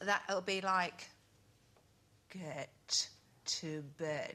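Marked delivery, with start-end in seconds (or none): 2.3-4.3 frightening, threatening, scary voice. Showing the voice used when Jake has been naughty: scary voice. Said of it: "Really scary".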